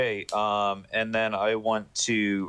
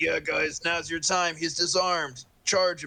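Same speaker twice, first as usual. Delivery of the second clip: pitched-up, put-on loud yell; 8 semitones higher than usual. Calling to the others in character after disarming him: yelling out. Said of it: "I'm gonna yell out".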